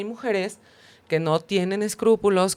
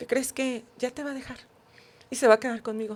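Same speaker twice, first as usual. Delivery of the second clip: small, dainty, teeny little put-on voice; 4 semitones higher than usual. Retelling a phone call to the president's wife: Marilyn Monroe little voice. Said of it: "Así con su vocecita".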